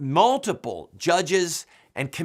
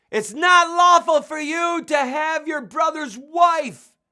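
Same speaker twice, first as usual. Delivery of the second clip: very high, very slow, drawn-out shrieking scream; 13 semitones higher, 6 dB louder than usual. Picturing someone screaming in a political setting: imitating someone screaming. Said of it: "someone started screaming at the top of their lungs".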